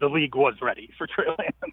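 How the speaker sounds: grand, portentous, dramatic voiceover narrator voice. Imagining six months ahead, the speaker says it in a narrator voice. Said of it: "it's going to be the narrator voice".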